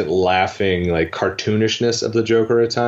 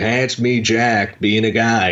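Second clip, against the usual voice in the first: bad, hammy overacted star voice. Describing how Jack Nicholson plays his characters: terrible Jack Nicholson impression. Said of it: "that's a terrible impersonation".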